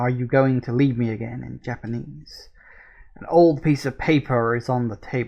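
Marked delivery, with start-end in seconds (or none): none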